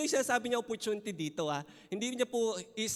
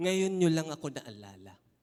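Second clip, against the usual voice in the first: dry, sarcastic, mocking delivery; 4 semitones lower than usual. Reading a line from a letter to a church: sarcastic reading. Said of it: "Parang ang sarcastic ni Paul kung babasahin mo ng gano'n".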